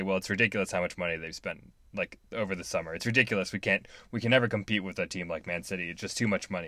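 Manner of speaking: ordinary delivery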